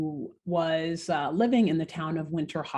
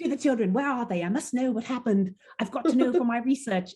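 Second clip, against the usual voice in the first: put-on British accent drifting in and out, pitched up; 6 semitones higher than usual. Retelling a professor walking in and asking questions, Professor Higginson in-and-out British accent. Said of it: "in and out of a British accent".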